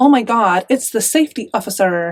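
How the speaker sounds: poor, put-on American accent. Talking about what things would be called in america, in a bad american accent. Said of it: "why do I have to say oh my God to get an American accent".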